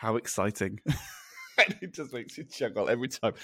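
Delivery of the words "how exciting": soft, low, dulcet tone. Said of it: "in this really dulcet tone".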